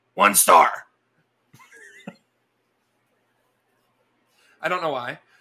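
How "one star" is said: low, loud grunted delivery. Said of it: "like, grunted".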